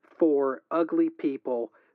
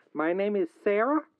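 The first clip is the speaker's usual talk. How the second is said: put-on southern accent with a strong twang; 4 semitones higher than usual. Caller on the Accidents Happen podcast introduces herself in a Sarah southern voice. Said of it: "I think this is more of a southern voice".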